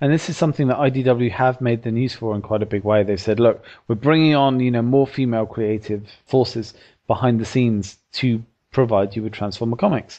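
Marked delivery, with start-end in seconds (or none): none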